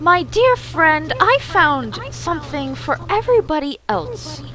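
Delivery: tutting voice. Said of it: "tutting at you".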